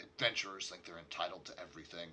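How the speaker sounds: muttering under breath. Voicing a server walking back down the bar: muttering under breath. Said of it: "you hear him mutter under his breath".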